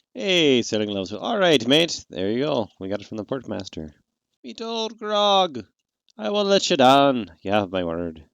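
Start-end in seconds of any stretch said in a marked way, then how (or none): 4.5-8.2 put-on slow, high-pitched Irish accent. Voicing a character in a game, Irish accent. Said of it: "so I can use the Irish accent".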